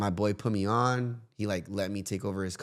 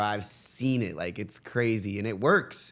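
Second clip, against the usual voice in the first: normal talking voice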